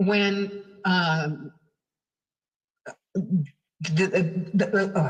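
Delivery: stuttering, stammering and tripping over words. Starting to answer a questioner, the speaker gets stuck, stuttering. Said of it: "sorry, I stutter".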